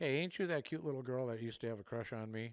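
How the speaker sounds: mock smart-aleck teasing, dripping with heavy sarcasm. Retelling the first thing he said to Tiffany: retelling a sarcastic tease. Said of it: "being real sarcastic".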